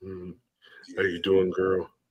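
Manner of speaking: deep seductive murmur, very low and soft. Offering his voice to the others, speaking in a deep sensual voice. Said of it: "you need my deep sensual voice".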